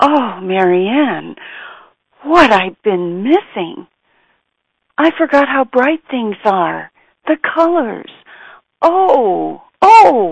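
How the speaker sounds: acted-out gasp. Speaker retells a woman's words after her eye cup was removed, retelling a gasp. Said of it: "she gasped".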